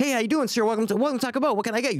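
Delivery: very cheerful, chipper voice. Retelling a Taco Bell worker greeting a customer; imitating a very cheerful voice. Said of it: "I hear like a very cheerful voice".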